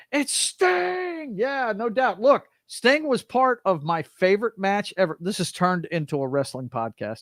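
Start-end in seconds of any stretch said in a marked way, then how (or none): 0.1-1.3 very high announcer voice with the name drawn out. On a podcast, naming Sting in a Tony Schiavone voice. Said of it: "in my Tony Schiavone voice".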